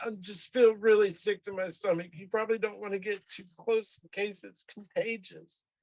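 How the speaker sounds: whiny little voice. A character turns down an offered hug, speaking in a whiny little voice. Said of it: "he's got a whiny little voice".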